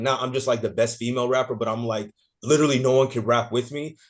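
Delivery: normal talking voice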